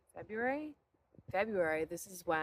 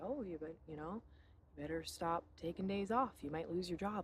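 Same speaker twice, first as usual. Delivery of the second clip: ordinary delivery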